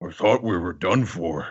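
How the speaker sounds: breathless, panting cartoon-dub character voice. Reading a recap line as Heavy Point Chopper: Heavy Point Chopper voice. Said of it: "Heavy Point Chopper voice".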